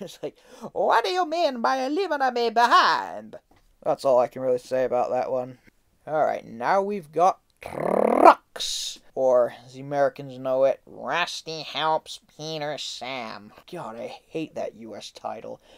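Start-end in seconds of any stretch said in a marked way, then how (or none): 0.7-3.4 put-on very high, sing-song, swinging Italian accent. Discussing an episode, quoting a line in George Carlin's Italian voice. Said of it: "I really love George Carlin's Italian voice".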